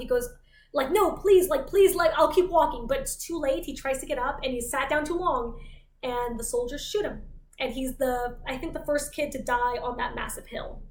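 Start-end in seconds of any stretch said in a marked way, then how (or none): 0.9-2.9 play-acted desperate, sudden panic in a rush. Retelling a walker trying to get up after the third warning: imitating panicked pleading. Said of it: "in a moment of panic".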